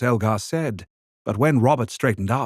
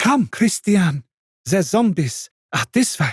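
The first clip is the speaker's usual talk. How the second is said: cheerful, glad, happy, pitched-up voice; 7 semitones higher than usual. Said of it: "saying in a happy tone".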